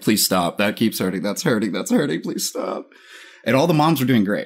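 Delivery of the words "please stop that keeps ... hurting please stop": put-on pained, hurting, begging, pleading voice. Retelling begging the teacher to stop pushing his leg: retelling his own pained plea. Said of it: "And I'm like".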